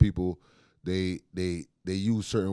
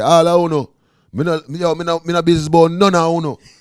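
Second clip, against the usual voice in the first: put-on Jamaican accent, higher and louder; 10 semitones higher, 13 dB louder than usual. Comparing island accents, imitating a jamaican accent. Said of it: "a Jamaican would say".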